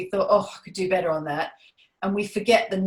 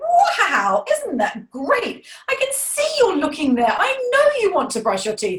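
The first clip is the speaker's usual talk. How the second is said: very high, swooping, sing-song encouraging voice; 11 semitones higher, 5 dB louder than usual. Demonstrating how a parent coaxes a reluctant child, encouraging. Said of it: "You're doing it encouragingly".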